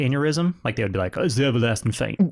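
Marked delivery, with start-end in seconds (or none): 1.2-2.3 put-on Southern accent. Quoting what people back then would say about a death: southern accent. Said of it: "my Southern accent for stuff like that".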